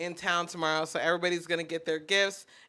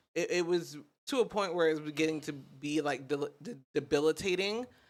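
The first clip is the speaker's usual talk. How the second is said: stuttered, stammering start on debilitating. Speaker explaining something to listeners, stuttering. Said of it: "I'm over here stuttering".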